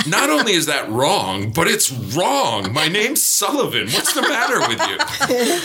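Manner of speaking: high, exaggerated incredulous tone, pitched way up.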